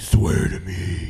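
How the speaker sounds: deep, low, loud superhero voice. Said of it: "It sounded like Batman".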